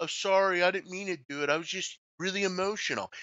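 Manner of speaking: mocking, fake-sorry voice. Mocking a player who puts on an act after doing something dumb: imitating a fake apology. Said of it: "Then he puts in this".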